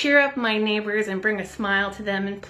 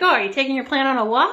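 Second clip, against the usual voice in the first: put-on, loud, teasing, sarcastic quip; 4 semitones higher, 5 dB louder than usual. Retelling a remark to a neighbor carrying a plant: imitating own sarcastic remark. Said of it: "I was kind of sarcastic".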